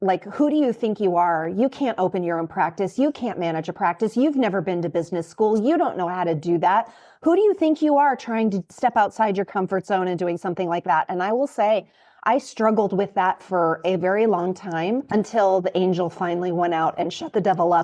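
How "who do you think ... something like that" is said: ordinary delivery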